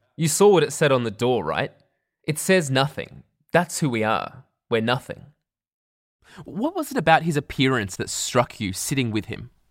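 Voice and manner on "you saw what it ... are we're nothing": ordinary talk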